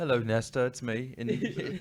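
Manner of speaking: put-on English accent. Acting out a dream version of [name]: [name] in English accent. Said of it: "In my dreams, I have a English accent".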